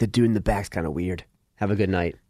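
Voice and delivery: quiet, low, discreet voice. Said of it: "I'd be like".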